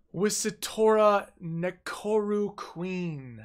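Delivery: very slow, each part sounded out. Reading out a card's name while reviewing the card, said very slowly. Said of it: "I had to say that very slowly".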